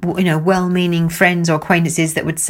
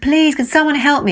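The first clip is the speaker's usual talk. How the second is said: raised, pitched-up shouting; 9 semitones higher than usual. Retelling how he called for help from a boat on a lake, imitating someone shouting. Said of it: "he's shouting".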